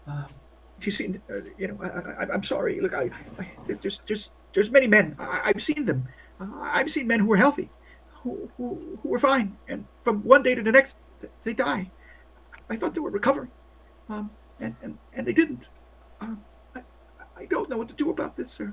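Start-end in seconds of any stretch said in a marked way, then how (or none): 1.8-18.7 scared, frightened voice, stammering and stumbling over words. Voicing a nurse frightened by an intimidating soldier: scared nurse voice.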